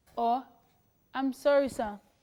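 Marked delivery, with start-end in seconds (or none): 1.2-2.0 put-on calm tone, louder. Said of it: "I'm saying the "I'm sorry, sir" calmly".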